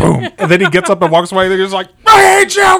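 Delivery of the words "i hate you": mock shrill, enraged yell, very high pitched. Retelling Clifford getting up and walking away: imitating Clifford angry. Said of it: "He's so, so mad all the time".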